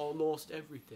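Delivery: put-on sad British accent. Joking about a movie character turning sad: put-on sad british accent. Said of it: "when you turn sad, you turn British".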